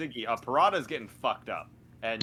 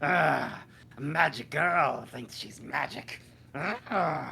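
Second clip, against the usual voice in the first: very slow, agonized, drawn-out creaky groan; 4 semitones higher than usual. Voicing a character stabbed through the chest, acting in horrible pain. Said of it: "this horrible pain stab into it as she just like".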